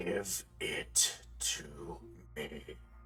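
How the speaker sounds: faint, barely audible, rasping whisper. In a role-play scene, something tall and metal speaks: barely audible raspy voice. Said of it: "barely audible, raspy voice".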